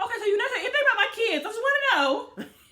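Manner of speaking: mock very high, tense forced calm, anxious underneath. Retelling a woman questioning someone about her kids: imitating someone calm but anxious. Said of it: "That's exactly how she was".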